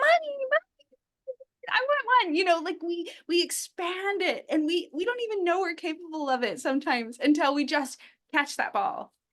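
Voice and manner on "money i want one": very high-pitched, put-on childlike little boy voice. Talking about improv, showing off their little boy voice. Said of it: "I could be my little boy voice and be like".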